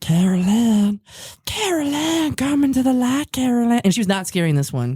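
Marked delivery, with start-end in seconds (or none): 0.0-3.8 very slow delivery with every word drawn out. Doing a favorite voice of the lady from Poltergeist. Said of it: "I love doing her, her voice".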